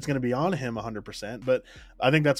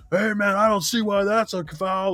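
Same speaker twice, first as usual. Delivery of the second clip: play-acted, loud, high, showy protesting shout; 8 semitones higher, 3 dB louder than usual. Describing a big guy arguing a foul with the refs, imitating him yelling at refs. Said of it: "he'd be, like, yelling".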